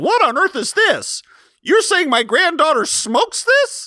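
very high, put-on old lady voice. Imagining grandma finding a joint in a wedding gift bag, impression of Sasha's grandmother. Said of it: "That's my impression of Sasha's grandmother".

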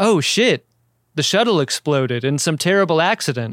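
ordinary talk, nothing marked

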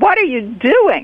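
high, screeching, half-shrieked. Retelling a woman catching the speaker bagging stems, retelling a screech. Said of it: "she more or less screeches".

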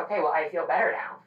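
ordinary delivery

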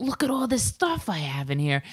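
put-on New York Staten Island accent. Telling a story about a man from Staten Island, the speaker quotes him: Staten Island accent. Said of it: "where's that accent from".

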